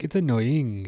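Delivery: put-on Welsh accent. Speaker repeats his own earlier remark about the match, in a Welsh-sounding accent. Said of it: "I don't know why that sounded so Welsh".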